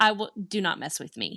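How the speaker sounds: ordinary talk, nothing marked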